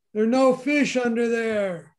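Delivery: huge, big booming voice. Telling a joke, voicing the unseen speaker in the background in a big booming voice. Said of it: "Big booming voice in the background says".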